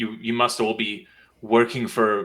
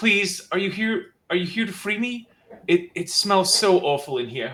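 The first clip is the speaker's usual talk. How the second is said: high voice calling out; 9 semitones higher than usual. Voicing a kidnapped captive behind a padlocked door: calling out for help. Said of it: "you hear this voice calling out".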